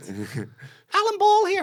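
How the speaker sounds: very high, swooping, sing-song jokey voice. Retelling a phone call where the caller introduced himself: high-pitched Alan Ball voice. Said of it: "In a, in a high pitched voice".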